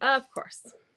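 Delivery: dismissive, condescending delivery.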